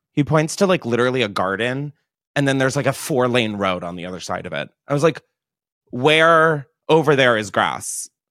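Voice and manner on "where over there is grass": put-on bitchy, pointed, snippy tone, slow. Retelling an argument with a park ranger over her dog: retelling own snippy reply. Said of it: "I'm kind of being a bitch".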